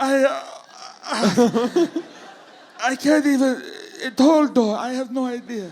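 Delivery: high, slow, fake elderly Italian accent. Acting out a figure in church asked a question: put-on old Italian accent. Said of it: "I'm an old Italian".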